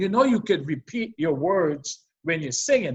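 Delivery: ordinary delivery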